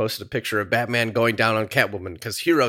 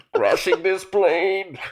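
comic-book villain voice, pitched high; 8 semitones higher than usual. Doing a Bane impression while joking with others: Bane voice. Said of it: "I do Bane's voice all the time".

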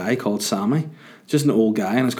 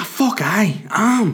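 enthusiastic and eager, higher; 11 semitones higher than usual. Retelling the taxi driver's answer about working all day: imitating an enthusiastic driver. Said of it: "so enthusiastic".

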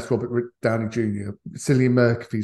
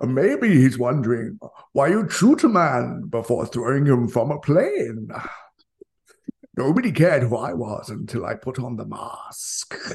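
menacing, movie-villain style voice. Doing for the other speaker, who begged for it, a Bane impression. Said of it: "your imitation of Bane".

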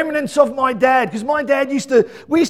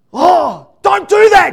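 mock yelling, louder, higher, slower; 5 semitones higher, 7 dB louder than usual. Retelling a kids' indoor soccer game where a boy gets pushed, imitating Mel yelling. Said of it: "She starts yelling across Major League".

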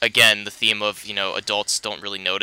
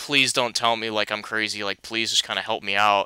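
mock pleading voice; 4 dB quieter than usual. Retelling a film scene where he asks his mom a question, acting out pleading. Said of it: "he's kind of, like, pleading".

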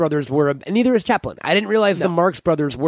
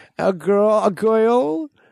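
put-on old New York voice, higher; 6 semitones higher than usual. Retelling an old story in an old Groucho Marx voice. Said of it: "I think I do a better old Groucho".

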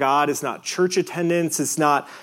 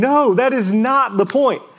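acted, all-out, high-pitched screaming; 6 semitones higher, 4 dB louder than usual. Explaining the emphasis of a passage, the speaker is mock screaming. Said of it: "Like he's screaming".

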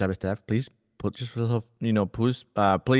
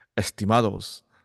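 political speaking style, Spanish. Recalling speaking over the loudspeaker, in a politician voice in Spanish. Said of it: "my politician voice in Spanish".

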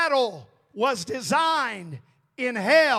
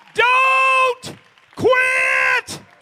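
very high-pitched, loud preacher-style scream; 12 semitones higher, 6 dB louder than usual. Preaching on a Wednesday night, urging listeners not to quit: screaming. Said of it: "I rise on this Wednesday night to scream as loud".

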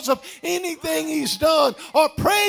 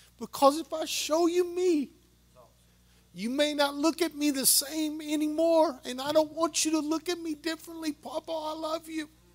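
put-on crying, tearful pleading tone, quieter; 9 dB quieter than usual. Retelling a grandchild's tearful phone confession: imitating a granddaughter crying. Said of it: "And she was crying".

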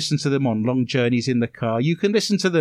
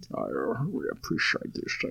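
put-on hushed, breathy whisper in a Scottish accent; 11 semitones lower, 11 dB quieter than usual. Repeating a thank-you when asked to use an accent, in a Sean Connery impression. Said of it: "Shouldn't you say that in an accent?".

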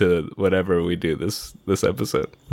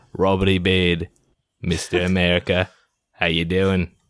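put-on Australian accent. Introducing himself as a podcast host with a put-on Australian accent. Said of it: "but you have an Australian accent".

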